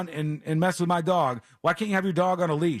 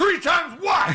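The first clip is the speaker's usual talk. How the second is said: put-on very high, loud, aggressive shout; 11 semitones higher, 4 dB louder than usual. Retelling how another dog owner snapped back at the speaker: retelling a loud, aggressive demand. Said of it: "He said it like that loud and aggressive".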